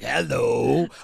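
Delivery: creaky, loud creature voice.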